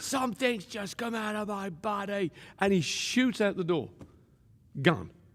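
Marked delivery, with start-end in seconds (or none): 0.0-2.3 shrieking, high-pitched screaming. Retelling a man jumping in the air at his news: imitating someone screaming.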